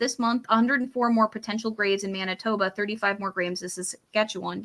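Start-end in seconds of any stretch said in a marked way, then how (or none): none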